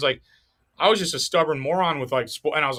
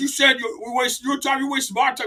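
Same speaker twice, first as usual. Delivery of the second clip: put-on high, raised yell; 9 semitones higher than usual. Retelling how a boss at a sales job yelled: imitating a boss yelling. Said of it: "He's yelling at me".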